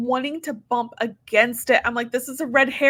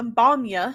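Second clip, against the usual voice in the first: put-on Manchester accent; 3 semitones lower than usual. Repeating a funeral director's joke line in his Manchester accent. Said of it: "Except he says in his accent".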